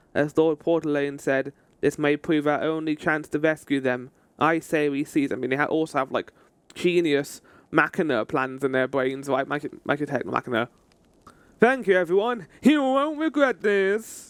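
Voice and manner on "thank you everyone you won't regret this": eager, enthusiastic, pitched-up character voice. Reading a game character's thanks to everyone aloud: enthusiastic Sid voice. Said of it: "I wanted to give some enthusiasm to Sid's voice".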